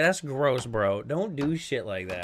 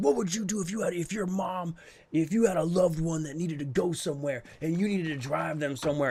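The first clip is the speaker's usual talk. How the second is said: put-on heated, badgering, in-your-face screaming; 4 semitones higher than usual. Retelling an inmate screaming while being booked in: imitating someone screaming. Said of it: "he's screaming in my face".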